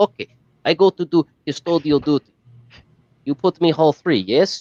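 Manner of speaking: put-on Russian accent, high pitch, slow. Acting out a story of playing a foreign janitor and asking where to be posted, imitating a russian accent. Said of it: "they gave me a Russian, and they had to talk like this".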